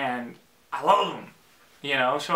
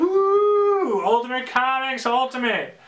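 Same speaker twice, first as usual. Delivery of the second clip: high, loud, excited whoop. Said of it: "like, all excited".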